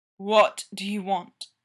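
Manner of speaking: low growl, words barely holding together. Narrator reads Derek's question to Styles in a barely coherent growl. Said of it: "his voice a barely coherent growl".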